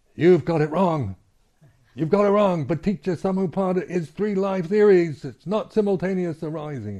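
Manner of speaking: very high, furious scolding shout, acted out. Retelling a young monk's correction on the way to the toilet: imitating a monk yelling angrily. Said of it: "And yelling at me like that".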